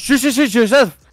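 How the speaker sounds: high, loud shushing yell.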